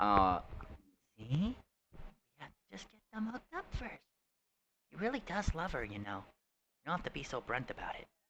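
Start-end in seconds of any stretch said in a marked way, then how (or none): 1.2-8.0 soft, high, close half-whisper. Voicing a character who leans in to one player: half-whispering to one player. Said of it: "she kind of whispers up into your ear".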